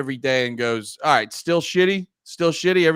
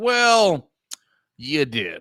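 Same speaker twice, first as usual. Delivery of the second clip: supremely confident, cool, unbothered, nothing-fazes-me delivery. Quoting a favorite film line: imitating Cliff, cool and unbothered. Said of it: "the coolest, most confident guy that can't be bothered".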